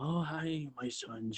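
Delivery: calm, soft, hushed, very slow, unhurried voice. Recalling the cartoon Splinter greeting his sons, calm Splinter voice. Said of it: "nice, calm, collected".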